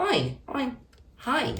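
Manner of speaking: very high, soft, squeaky little furry-monster voice. Explaining who Elmo is to viewers, trying an Elmo voice. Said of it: "Maybe you don't know who Elmo is".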